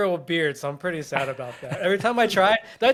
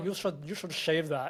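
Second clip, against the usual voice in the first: put-on, guessed-at Swedish accent; 2 semitones lower, 10 dB quieter than usual. Imitating a manager from Sweden telling him to shave: put-on Swedish accent. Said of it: "what's a Swedish person sound like?".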